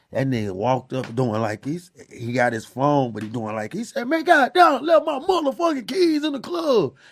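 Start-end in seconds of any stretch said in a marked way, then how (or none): 4.1-6.9 put-on forceful, aggressive griping, high-pitched. Retelling how a man talked his way past club security: imitating an aggressive complaint. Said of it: "he was so aggressive about it".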